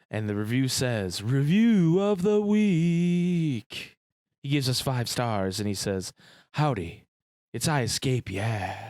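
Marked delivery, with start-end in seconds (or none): 1.2-8.9 buttery-smooth radio voice, with "week" drawn out. A podcast host reads a listener's five-star review aloud; I Escape voice. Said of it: "read his review in my best my best I Escape voice".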